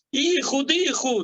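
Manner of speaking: put-on flustered shouting. Retelling a story, imitating a trapped young man shouting: retelling a young man's shout. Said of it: "empezó a gritar".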